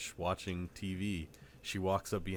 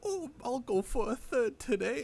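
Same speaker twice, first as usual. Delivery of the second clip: very horrible, awful fake British accent, very high; 4 dB louder than usual. Retelling a story about a man putting sugar in his tea; very horrible British accent. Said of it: "it's like a very horrible like British accent".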